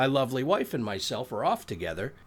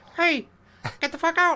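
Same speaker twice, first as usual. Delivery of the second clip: loud, high-pitched squeak; 5 dB louder than usual. Joking about a friend who stayed through a hurricane: Mickey Mouse voice. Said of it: "That was a really good Mickey Mouse".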